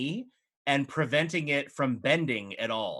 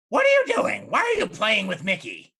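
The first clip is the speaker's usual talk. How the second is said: put-on high, loud old hag voice; 7 semitones higher, 8 dB louder than usual. Game master voicing the hag who confronts the players, in an old hag voice. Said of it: "the hag in front of you looks at you and goes".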